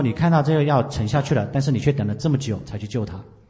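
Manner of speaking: usual speaking voice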